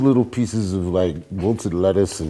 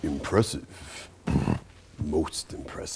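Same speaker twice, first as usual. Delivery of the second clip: breathy, whispered movie-style voice; 4 semitones lower, 10 dB quieter than usual. Asked by another speaker for a best Darth Vader voice. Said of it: "let me hear your best Darth Vader voice".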